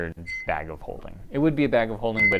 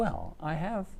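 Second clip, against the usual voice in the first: secretive, conspiratorial, higher and quieter; 8 semitones higher, 7 dB quieter than usual. Voicing a character offering the player an item: conspiratorial. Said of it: "he looks around conspiratorially".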